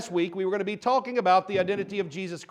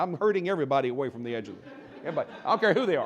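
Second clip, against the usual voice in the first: ordinary talk, nothing marked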